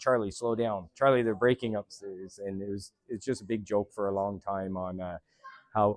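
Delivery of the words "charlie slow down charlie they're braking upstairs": usual speaking voice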